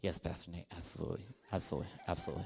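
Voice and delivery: very soft, hushed, repeated. Retelling what a girl once said to the pastor: imitating a girl. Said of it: "And she was like".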